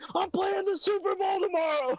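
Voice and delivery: put-on very high, frantic, panicked shriek. Speaker retells begging not to go to jail before the Super Bowl, retelling a panicked scream. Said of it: "I'm just screaming".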